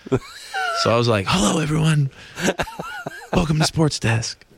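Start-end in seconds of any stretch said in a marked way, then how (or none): 1.2-4.3 high-pitched, nervous whisper-scream. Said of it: "it came out as, like, a whisper scream".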